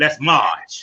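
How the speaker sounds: put-on voice, pitched very low. Talking about what to do next: Jesse Jackson voice. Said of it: "my Jesse Jackson voice".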